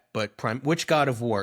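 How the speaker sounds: plain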